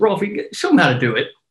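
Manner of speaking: put-on sarcastic ribbing. Standing by a basketball court, retelling someone's sarcastic remark. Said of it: "I think sarcastically goes".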